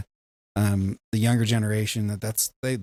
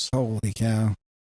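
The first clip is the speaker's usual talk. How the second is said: bad baseball announcer voice. Reacting to ticket prices with a Harry Caray impression. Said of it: "his worst Harry Carey impression ever done".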